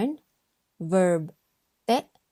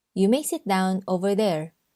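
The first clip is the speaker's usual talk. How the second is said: usual speaking voice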